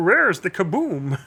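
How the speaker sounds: high, put-on voice. Retelling a voice calling from the back of the room when plans failed, imitated. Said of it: "I tried to do that voice".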